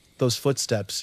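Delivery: plain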